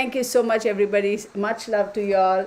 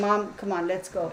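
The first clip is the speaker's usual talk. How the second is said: dog voice, quieter; 4 dB quieter than usual. Speaking for the restless dog who wants attention: voicing the dog. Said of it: "that's his thing of saying".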